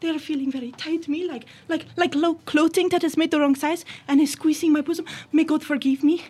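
Swedish accent, pitched high.

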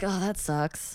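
offhand, easygoing, nonchalant tone. Showing how the speaker casually says sucks, nonchalant. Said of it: "Like it's casual. It's free".

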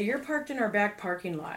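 ordinary talk

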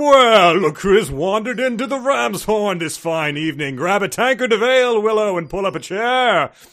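hearty, resonant tavern-storyteller voice. Asked for a best impression of the voice, greeting Willow at the Ram's Horn Inn, hearty and resonant. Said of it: "give me your best impression of that voice".

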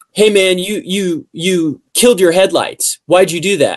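play-acted, furious, angry police officer voice. Retelling what an arresting officer said: imitating a furious officer. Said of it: "he's furious".

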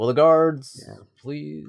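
announcer-style call, ring announcer voice. Recapping a movie minute, quoting the ring announcer to the guards: ring announcer impression. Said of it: "Your impression of the ring announcer".

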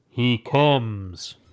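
slow, hushed, intoned delivery with "comes" drawn out. Retelling a story scene, the speaker voices the Stormfather, in a Stormfather voice. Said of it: "that was a good Stormfather voice".

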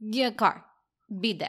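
put-on, heavy, thick Russian accent.

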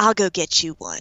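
put-on Texas accent, Dallas style. Retelling a conversation, the speaker quotes what she said: Dallas accent. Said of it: "I'm going to do a Dallas accent".

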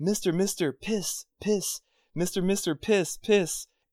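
mock crying, high and tearful, repeated over and over. Retelling a guarded man's repeated plea to a buddy, imitating his crying. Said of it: "the guy was like crying the whole time".

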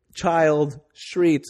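ordinary talk, nothing marked

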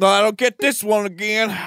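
imitated Southern accent. Mocking another speaker as a confused moviegoer: imitating a friend's southern accent. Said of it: "He gets really southern as fuck".

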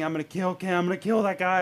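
put-on furious, heated rant, tense and angry. Retelling how a father in the van lost it: imitating a screaming dad. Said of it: "He was screaming".

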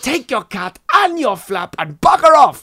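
very loud, high-pitched, irate ranting bellow. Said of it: "the routine ended".

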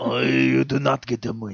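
put-on Japanese accent. Retelling a shopkeeper's warning from Chinatown, imitating with a Japanese accent. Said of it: "No, that's Japanese".

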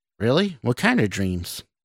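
ordinary delivery

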